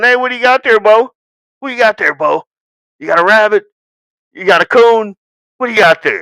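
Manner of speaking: quick-fire, fast handler-style patter. Explaining dog handling, the speaker shows how to stop and ask the dog, talking to a dog. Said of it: "stop what you're doing and going".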